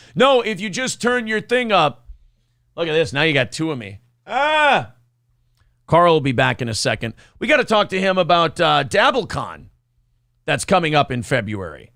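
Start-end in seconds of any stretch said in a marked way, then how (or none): 0.2-2.1 yelling, high and raised, calling out loudly. Yelling a tip at a guest who can't hear: mock yelling at someone who can't hear. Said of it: "yelling at him knowing he can't hear".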